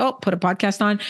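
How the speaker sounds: normal talking voice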